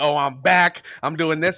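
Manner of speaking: put-on boastful tone. Retelling how she talked before the race: imitating someone boasting. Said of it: "she was doing a little bit of woofing".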